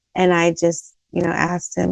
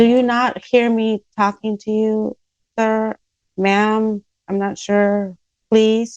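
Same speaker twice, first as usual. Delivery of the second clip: mock annoyed, slow, pointed, irritated tone; 3 semitones higher than usual. Retelling confronting someone who ignores the speaker: retelling angry demand. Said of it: "I'm getting more and more pissed".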